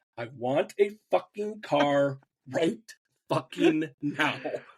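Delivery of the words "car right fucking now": normal talking voice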